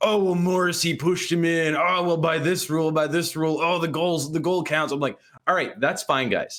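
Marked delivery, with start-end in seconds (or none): 0.0-4.9 put-on salty, bitter, annoyed voice, pitched higher. Complaining about Twitter reactions to a goal, mocking salty Dallas fans. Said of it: "salty Dallas fans like being like".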